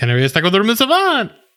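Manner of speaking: excited, eager upspeak, each phrase climbing. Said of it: "every sentence is like".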